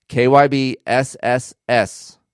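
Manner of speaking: enunciated slowly, crisply and loudly. Pitching the stock suspension, saying the brand name slow, crisp and loud. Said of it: "I say it slow. I say it crisp. I say it loud".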